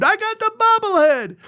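very high triumphant scream. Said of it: "I screamed".

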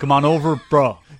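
put-on American accent. Asked to talk like an American, trying a put-on American accent. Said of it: "I'll try an American accent for you".

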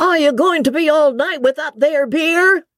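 very high-pitched, persistent shout. A persistent voice in the coffee-room calls to Sally, the host's daughter, shouting. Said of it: "shouted a more persistent voice".

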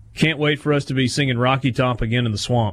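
normal talking voice

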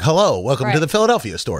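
put-on high old-time radio voice. Showing how radio voices sounded in olden times, high old-time radio voice. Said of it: "this high kind of pitch from up here kind of voice".

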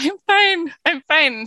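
words pushed out through tears, high and sobbing. Retelling answering worried strangers at a gas station, retelling answering through tears. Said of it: "through my tears".

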